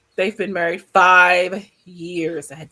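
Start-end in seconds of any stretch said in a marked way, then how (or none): 1.0-1.7 stressing five, louder. Reading someone's written account aloud the way they wrote it, stress on FIVE. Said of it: "I had to put the emphasis on the five".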